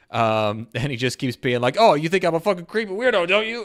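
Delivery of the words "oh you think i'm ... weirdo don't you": play-acted belligerent drunk, loud and very high. Retelling a drunk man trying to start a fight, imitating a belligerent drunk. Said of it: "it's a very drunk drunk guy thing".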